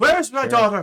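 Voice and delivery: shrill, furious yell, very high and very loud. Voicing a shopkeeper pushing through guards: angry shouting. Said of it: "he is screaming and shouting at the group".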